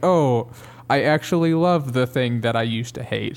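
plain

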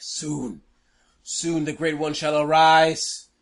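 slow, shrieking, screaming monster voice. Voicing a creature as it blows up: screaming creature voice. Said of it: "you hear the screaming from the creature".

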